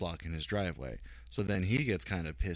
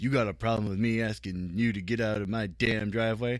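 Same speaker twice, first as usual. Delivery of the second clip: put-on crotchety grumpy old man voice; 3 semitones higher, 6 dB louder than usual. Retelling a driveway confrontation with a man: imitating a crotchety older man. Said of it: "this older, crotchety man".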